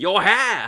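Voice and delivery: high, loud yell, hard to make out. Retelling what the boss yells when he attacks: imitating Lord Burrows yelling. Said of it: "it just sounds like he's going".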